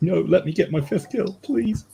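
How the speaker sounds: very high mock pleading voice. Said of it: "It's just like".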